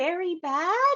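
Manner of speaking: very high, sad, sorrowful character voice with rising pitch. Voicing Toad as a character, looking at someone: sad Toad voice. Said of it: "Toad is just gonna look a little sad and just say".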